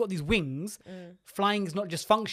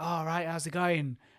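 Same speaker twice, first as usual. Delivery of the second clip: put-on East London accent. Retelling what the man who came to fix the boiler said: imitating an East London accent. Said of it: "he was quite East London".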